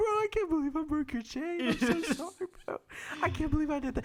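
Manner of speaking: high-pitched, fake, blubbering sobs. Telling how they broke a guy's chain, retelling a sobbing apology. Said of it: "big crocodile sobbing tears, and I'm like".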